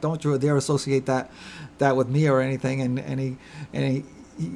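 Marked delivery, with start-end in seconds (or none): none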